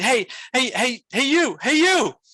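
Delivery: shrill, very high, drawn-out screaming. Retelling how an old lady called from across the street: imitating someone screaming. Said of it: "started screaming at me from across the street".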